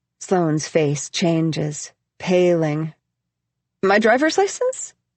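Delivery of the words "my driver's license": little, high-pitched, squeaky voice. Reading a character caught off guard by a request: squeaking. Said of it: "she squeaks".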